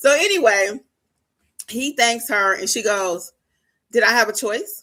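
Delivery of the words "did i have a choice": curt, snippy delivery full of attitude. Retelling a spouse's reply at a divorce signing: imitating someone with an attitude. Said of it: "with an attitude".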